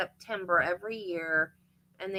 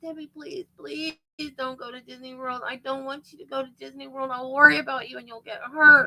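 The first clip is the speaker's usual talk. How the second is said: high, loud, weeping tearful voice, worried; 6 semitones higher, 5 dB louder than usual. Retelling a parent's plea not to go on a trip: imitating someone crying and pleading. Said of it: "and she's crying".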